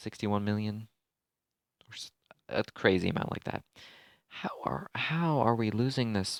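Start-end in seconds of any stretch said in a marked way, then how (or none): 4.3-6.4 voice breaks partway through the line. Gamer reacting to losing a match; voice cracking. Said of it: "voice crack".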